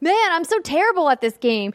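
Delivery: put-on young, whiny child voice. Retelling what a child teammate kept saying: imitating a child player. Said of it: "he kept saying the whole time".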